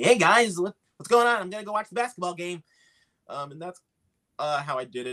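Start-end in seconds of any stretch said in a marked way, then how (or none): 0.0-2.6 put-on high, young little boy character voice. Speaker showing how he first voiced a show character; little boy voice. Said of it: "he's just going to come in talking like this".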